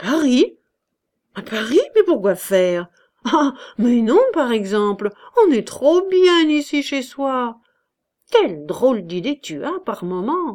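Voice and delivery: stunned, astonished, dumbfounded tone. A man answers a woman's timid question at dinner, stunned. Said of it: "Il fut stupéfait".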